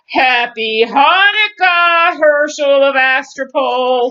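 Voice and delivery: loud, bone-cracking goblin voice. Reading a story where the goblin king greets a man, in a voice like cracking bones. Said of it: "a voice that sounded like the cracking of bones".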